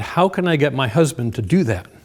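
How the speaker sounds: put-on frustrated voice. Retelling a mom's question during a parenting talk, imitating a frustrated voice. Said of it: "I could just hear the frustration".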